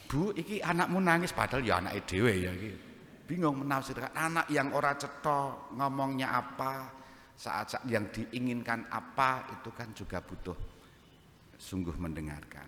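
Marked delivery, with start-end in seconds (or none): 0.1-1.3 high, confused voice. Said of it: "bapak-bapak iki mesti bingung".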